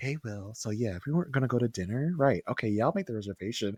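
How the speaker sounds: acted seductive voice. Alicia talking to Will so that Peter can hear: imitating Alicia's sultry voice. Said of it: "she's got the sultry Alicia voice on".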